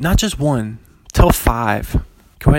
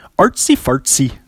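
put-on Swedish accent. Podcaster showing off their Swedish accent on a phrase, Swedish accent. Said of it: "That's my Swedish accent".

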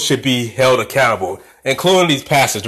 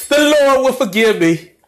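mock very high, tearful sobbing preacher-style pleading; 11 semitones higher than usual. Mocking how a pastor acts after sinning: imitating a pastor crying. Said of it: "he starts crying".

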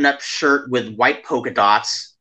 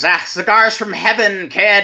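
mock shrieked cry, high-pitched and exultant; 8 semitones higher than usual. Retelling how a drunk companion threw cigars: imitating someone screaming. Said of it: "he just screams".

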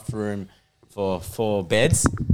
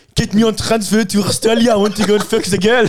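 very high, very loud put-on French accent; 12 semitones higher, 9 dB louder than usual. Retelling a funny story, quoting a man's request in a french accent. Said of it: "goes like this in the French accent".

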